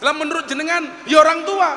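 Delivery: high, loud, cheeky tone.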